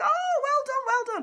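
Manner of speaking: high, loud, excited gushing.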